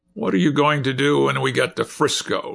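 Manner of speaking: curt, blunt, demanding tone. Captain Cullen corners Doherty on deck, demanding bluntly. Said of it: "he demanded bluntly".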